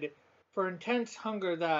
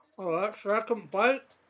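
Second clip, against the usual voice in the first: talking with mouth full of food. Tasting a caramel peanut snack, the speaker reacts to the second bite, talking with mouth full. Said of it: "I'm sorry for talking with my mouth full".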